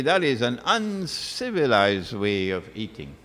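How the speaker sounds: usual speaking voice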